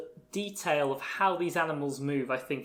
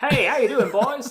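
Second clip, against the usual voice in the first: very loud, pitched-up, hearty belted voice; 9 semitones higher, 10 dB louder than usual. Describing how a character's voice changes when grown up: imitating adult Flower's voice. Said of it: "type voice".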